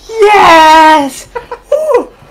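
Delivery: very high, loud screaming reaction. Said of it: "Do the Kino's reaction".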